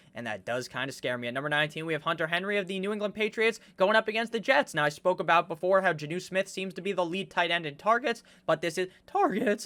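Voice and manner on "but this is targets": voice breaking and cracking mid-sentence. Host counting down a top-twenty player list, voice cracking mid-sentence. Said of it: "I think my voice cracked right there".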